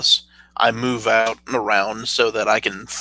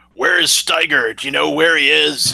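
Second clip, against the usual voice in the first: loud, pitched-up shout; 5 semitones higher, 3 dB louder than usual. Speaker's character calls to the others over comms after the bulldog is taken out, shouting over comms. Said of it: "I start shouting".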